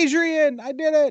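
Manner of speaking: very high-pitched comic character voice. Imagining a Stallone movie line redubbed: Ron Funches voice. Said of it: "I'm hearing Ron Funches' voice say".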